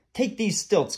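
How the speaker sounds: firm, commanding tone, pitched a little high. Reading a story aloud, voicing a lord giving a page boy an order: commanding. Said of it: "commanded Lord Droon".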